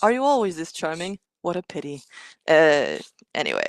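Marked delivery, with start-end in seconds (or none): 0.0-2.0 acted sarcastic robotic voice. Giving examples of the robot's backhanded insults: imitating Archie's snarky voice. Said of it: "says kind of snarky, backhanded, insulting things like".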